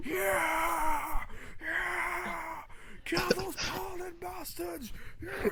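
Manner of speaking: very high, very slow, drawn-out wild crowd cheering. Voicing a crowd that goes wild at a hit: wild crowd cheering. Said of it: "the crowd goes wild".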